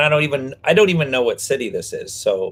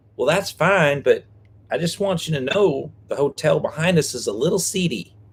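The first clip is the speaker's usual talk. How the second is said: slight put-on Southern accent; 4 semitones higher, 4 dB quieter than usual. Retelling what the woman at hotel check-in said about the neighbouring hotel, imitating a Southern accent. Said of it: "Is that your best Southern accent?".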